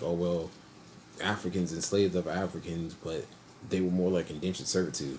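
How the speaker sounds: plain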